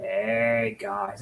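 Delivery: monotone, no energy, flat, low, soft, drawn-out "hey". Streamer comparing energy levels, imitating another streamer: The Quartering, flat low-energy impression. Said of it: "the quartering's just like".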